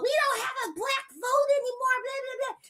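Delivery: shrill, very high, grumbling, whiny complaining voice. Mocking people who complain about losing the vote: imitating whiny complaining. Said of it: "kicking and screaming, talking about".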